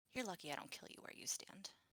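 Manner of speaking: whispered, breathy, threatening mutter, barely audible. Speaking in character as it starts drifting away, muttered under the breath. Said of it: "mutter under my breath loud enough for him to hear me".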